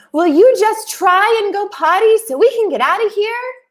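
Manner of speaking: play-acted shrill, very high-pitched yelling. Retelling asking a child in a bathroom to try: retelling her own yell. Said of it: "I'm yelling".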